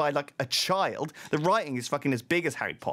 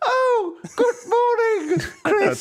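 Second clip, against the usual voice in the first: put-on very high, very loud comic old-granny voice; 8 dB louder than usual. Role-play scene, a grandmother greets Chris at her door, comical old granny voice. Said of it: "that comical old granny voice too".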